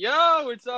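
put-on hyped-up, buzzing, high, super high-energy tone. Imitating the other speaker's greeting: imitating someone super high-energy. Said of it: "super high energy".

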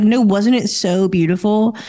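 ordinary talk, nothing marked

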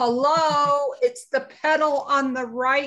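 acted screaming. Retelling yelling at a slow driver from the car: imitating herself screaming.

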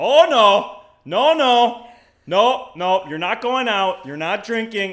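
put-on thick Wisconsin accent, shrill, high and booming loud. Retelling what Doug said in the background, in Doug's thick Wisconsin accent. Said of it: "his thick Wisconsin accent".

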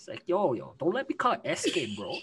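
put-on male voice with Toronto accent. Joking with friends, mimicking a Toronto guy, Toronto man accent. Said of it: "the Toronto man accent is legit still".

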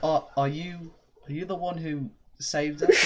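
put-on slowed-down British accent.

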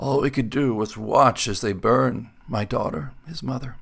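rough whispered voice. Narrator reading the man by the fire answering Martin, in a leathery whisper. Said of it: "His voice a leathery whisper".

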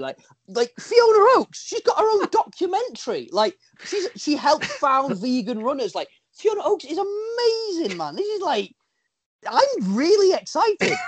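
very high, swooping, gushing excitement. Speaker gushes about a guest coming next week: voice up an octave. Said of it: "Voice went up an octave".

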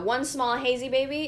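normal talking voice

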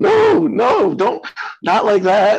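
high, loud, exasperated scolding tone.

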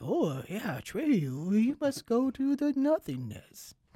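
high, slow creature voice with swooping pitch. Retelling a film scene about the creature with the scary face: imitating Falkor. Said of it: "He's like".

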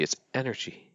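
soft, smoothed yoga voice. Demonstrating how people's voices change when they talk this way, in a yoga voice. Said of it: "their tone drops, their voice smooths out".

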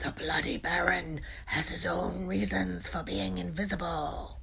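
hoarse, husky, raspy whisper. Harry speaks to Peeves, hoarse whisper. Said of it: "he said in a hoarse whisper".

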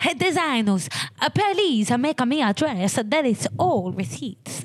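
put-on high, lisping Italian accent. Redoing a line addressed to designers, a speaker voices it as an Italian with a lisp: Italian accent with a lisp. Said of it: "I was thinking like an Italian with a lisp".

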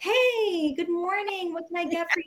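super-peppy, over-excited, very high-pitched chirp. Retelling a drive-through worker's greeting: imitating an over-excited cashier. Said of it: "she is so excited".

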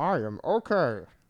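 muffled, slightly high-pitched cartoon voice. Quoting a movie line: muffled Flick voice. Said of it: "you hear him in a muffled voice say".

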